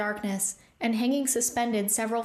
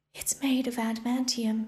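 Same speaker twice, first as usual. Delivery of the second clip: hushed whisper. A character speaking to companions in a story, whispered. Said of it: "she whispered".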